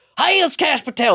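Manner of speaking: mock official-sounding voice. Showing guests the impression done for the kids: Kash Patel impression. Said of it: "That's the impression I do for my kids".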